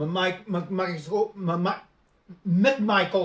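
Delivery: angry stutter, tripping over words. Speaker discussing the investigation in georgia, stuttering with anger. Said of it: "I'm just starting to stutter now".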